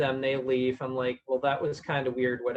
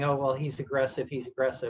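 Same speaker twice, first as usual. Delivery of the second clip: ordinary talk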